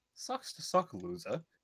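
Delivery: put-on posh British accent. Voicing a companion who just stole another player's kill, as Misha. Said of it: "Is that Misha's voice?".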